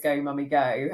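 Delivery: normal talking voice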